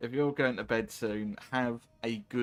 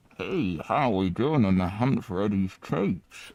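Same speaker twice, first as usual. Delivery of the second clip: put-on muffled voice, lower and louder; 4 semitones lower, 4 dB louder than usual. Speaker describing how a character sounds in the Far Harbor DLC, imitating a muffled voice. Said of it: "he sounds more like muffly".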